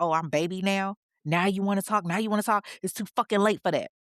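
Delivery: put-on mocking, sneering, smirking tone. Retelling the partner's sneering reply to her plea: imitating someone smirking mockingly. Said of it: "this smirk on his face like".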